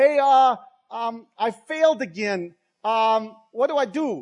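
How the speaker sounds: loud, very slow, halting non-native broken English. Retelling what a man at the test office said: imitating broken english. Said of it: "he says kind of in broken English".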